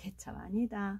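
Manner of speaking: muttered quietly to oneself.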